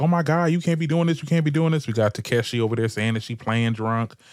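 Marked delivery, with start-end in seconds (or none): 0.0-1.9 high-pitched, raised, pleading yelling. Retelling how a cast member reacted to a passed-out girl: imitating Natalie yelling. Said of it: "Natalie yelling at her, like".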